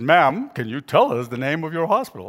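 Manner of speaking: smooth, rich, deep on-air announcer voice. Retelling the host repeating the question to the woman: rich deep radio voice. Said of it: "his rich, deep voice, his radio voice".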